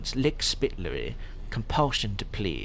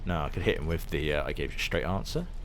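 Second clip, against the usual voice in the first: usual speaking voice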